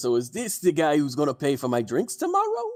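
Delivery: spoken through a big grin. A smiling city guard looks at one of the two arrivals and speaks, grinning. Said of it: "He's big, grinny smile".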